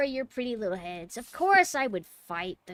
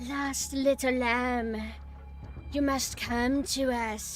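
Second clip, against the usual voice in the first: slow, drawn-out, corny possessed voice; 3 semitones higher than usual. Retelling how a possessed character taunts the hero: imitating possessed Ashley. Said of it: "the Plaga starts making her talk, and she's like".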